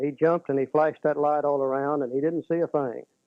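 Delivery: ordinary delivery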